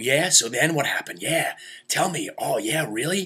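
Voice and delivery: eager, excited, acted out. Retelling a cousin's eager questions during a story: imitating an excited cousin. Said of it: "He's so excited about".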